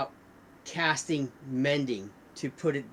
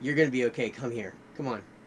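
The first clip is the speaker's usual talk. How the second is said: calm, soothing, reassuring, comforting tone; 2 semitones lower than usual. Voicing a character calling a friend down: calm, reassuring tone. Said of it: "it's not a fear".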